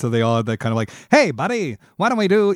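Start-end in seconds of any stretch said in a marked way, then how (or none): 1.1-2.5 put-on high, old-fashioned talkie-era mid-Atlantic accent. Explaining what voice coaches gave actors in the early talkies; mid-Atlantic accent. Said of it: "give everyone a mid-Atlantic accent".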